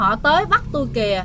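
plain

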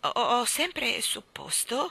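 timidly murmured, shy and quiet. The prime minister, answering a question before the king, murmured timidly. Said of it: "mormorò timidamente".

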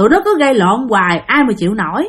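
ordinary delivery

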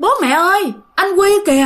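high, loud, alarmed shouting.

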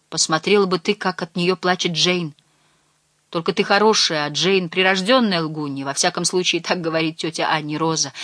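plain reading voice

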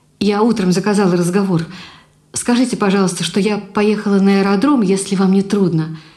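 ordinary delivery, nothing marked

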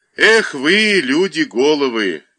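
loud, slow, drawn-out exclaiming voice. Narrator reads a policeman scratching the back of his head, exclaiming. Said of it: "воскликнул Сережкин и почесал затылок".

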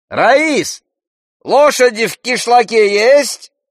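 shrill, high, loud carrying shout. Reading a character shouting a question to Rais without turning around, shouting. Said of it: "крикнул он".

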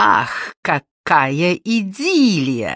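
mocking, sarcastic, with an audible smirk. Olga Borisovna replies to the others' excuses, sarcastic. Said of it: "саркастически усмехнулась Ольга Борисовна".

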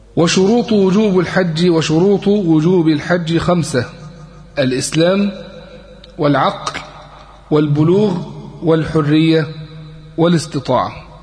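normal talking voice

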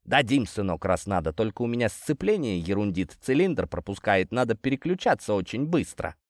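plain reading voice

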